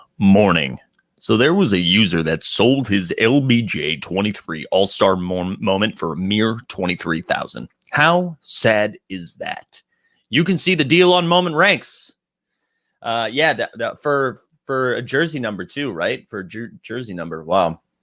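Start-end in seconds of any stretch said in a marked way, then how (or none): 0.2-9.8 theatrical, big dramatic announcer voice. Presenting a sale to viewers, reviving an old bit: dramatic voice. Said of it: "We got to go dramatic voice".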